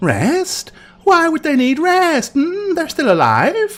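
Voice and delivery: very high, curious, inquisitive fox-spirit voice. Voicing a kitsune sneaking up on resting travelers: inquisitive kitsune voice. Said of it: "it's the kitsune".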